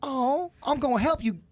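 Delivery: easy, peaceful put-on Georgia accent. Contrasting state accents, doing a put-on Georgia accent. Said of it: "Georgia got a little more".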